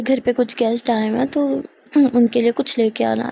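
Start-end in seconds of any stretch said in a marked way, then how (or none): none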